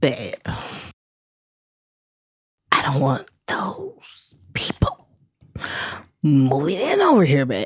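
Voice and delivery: breathy, half-whispered voice. Retelling what a man said to Steph, the speaker imitates his voice. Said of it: "And yes, this is his voice".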